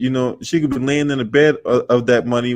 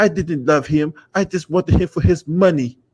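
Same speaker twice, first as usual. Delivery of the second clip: put-on Slovenian accent, pitched higher; 4 semitones higher than usual. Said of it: "talking shit about Trump in her Slovenian voice".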